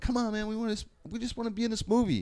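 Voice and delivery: play-acted begging plea, pitched way up. Retelling begging a director to let them stay: retelling a plea. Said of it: "And we're pleading".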